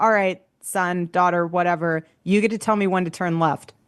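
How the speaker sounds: plain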